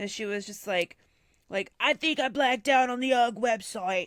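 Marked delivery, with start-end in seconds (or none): 1.8-4.1 put-on Australian accent, louder. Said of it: "that sounded Australian".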